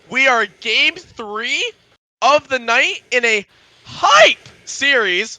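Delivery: voice cracking. Caster introducing the night's third game to viewers, voice cracking. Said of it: "Sorry for the voice crack".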